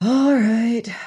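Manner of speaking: tired, weary, worn-out, resigned. Reading the narrator's reply after Stebbins protests about the line, tired. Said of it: "I said tiredly".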